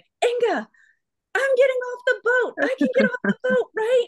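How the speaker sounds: very high-pitched, urgent, shouted yelling. Retelling calling back to someone before jumping off a boat: retelling a yell. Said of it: "I was yelling".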